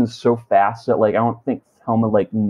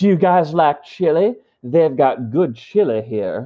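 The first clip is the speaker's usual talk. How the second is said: put-on old British man voice, higher; 5 semitones higher than usual. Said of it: "he sounds like this old British man".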